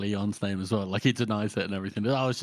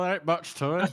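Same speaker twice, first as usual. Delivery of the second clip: imitated West Country voice; 8 semitones higher than usual. Asked to do the character's voice again, answering in a West Country accent. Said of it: "kind of like a West Country accent".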